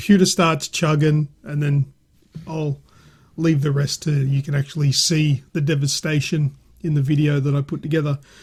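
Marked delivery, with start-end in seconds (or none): none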